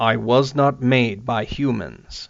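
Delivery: very deep, slow, powerful voice. Narrator reads a voice from within a darkened cell: very deep, powerful voice. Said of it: "said a deep, deep voice from within the darkened cell".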